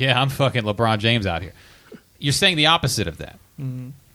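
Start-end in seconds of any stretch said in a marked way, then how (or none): 0.0-1.5 put-on sarcastic bragging tone. Explaining sarcasm, he plays a guy who just shot an air ball, acting out a sarcastic brag. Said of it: "when you say something sarcastic".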